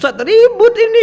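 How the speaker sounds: high, loud, laughing complaining.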